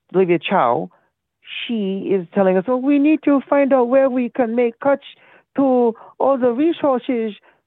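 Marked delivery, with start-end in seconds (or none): 2.7-7.4 high, fake babbling baby voice. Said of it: "Where's this accent coming from?".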